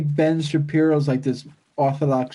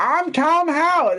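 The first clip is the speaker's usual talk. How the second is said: put-on good old boy country voice, higher; 12 semitones higher than usual. Mocking a game developer as a good old boy: Todd Howard impression. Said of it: "that's how he talks".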